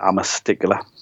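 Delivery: plain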